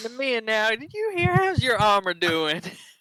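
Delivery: put-on American Southern accent. Voicing a character in a shared story, southern accent. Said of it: "the southern accent is".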